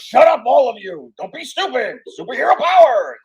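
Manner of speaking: shrill, high, loud anime-hero style yell. Acting out an anime guy screaming at the camera: imitating an anime guy screaming. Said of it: "The guy screaming at the camera".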